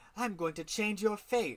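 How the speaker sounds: put-on spoken in British accent. Quoting a character's line with a British accent. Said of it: "I said his voice with, like, a British accent".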